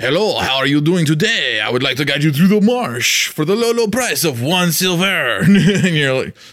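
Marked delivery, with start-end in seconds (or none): 0.0-5.4 put-on French-accented elf voice. A narrator voices an elf guide greeting the players, elf with a french accent. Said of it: "like a French accent".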